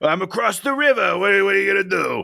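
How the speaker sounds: put-on New Jersey accent. Asked to do a New Yorker voice, answering in a put-on New Jersey accent. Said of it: "A New Yorker".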